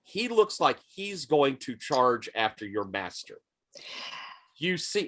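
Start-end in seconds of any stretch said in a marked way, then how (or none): none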